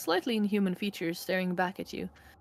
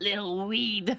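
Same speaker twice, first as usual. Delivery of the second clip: halting, broken, raspy, superior sneering drawl. Asked to play the creepy guy, the speaker gives his line: halting, rasping voice. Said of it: "halting, rasping voice".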